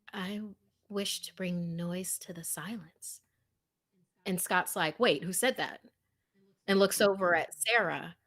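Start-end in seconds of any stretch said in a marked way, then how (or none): 0.1-3.2 tiny, very soft, small voice. Narrating a scene as two characters sit and think; small voice. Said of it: "you hear a small voice go".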